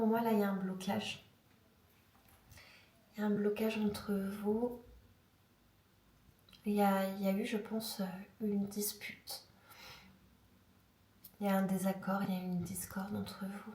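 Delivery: hoarse, broken, nearly lost voice, speaking softly. Reading tarot cards for a viewer: hoarse, nearly lost voice, speaking softly. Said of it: "j'ai une extinction de voix".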